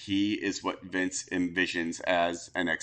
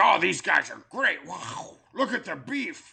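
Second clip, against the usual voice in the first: very high, rough, strained, raspy voice from the throat; 11 semitones higher, 4 dB louder than usual. Imitating Vince praising big wrestlers: Vince voice. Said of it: "I love when you do the Vince voice".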